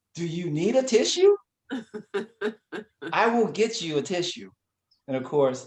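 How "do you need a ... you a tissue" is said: high-pitched, incredulous, disgusted tone. A man retells what his wife often says to him, mock-disgusted disbelief. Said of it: "with the equal amount of disgust and disbelief in her tone of voice".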